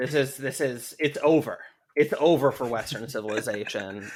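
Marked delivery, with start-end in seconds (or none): none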